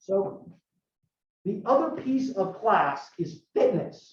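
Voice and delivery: slow, cracked, breaking voice. Introducing the next topic of the class, voice cracking. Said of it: "my voice is cracked".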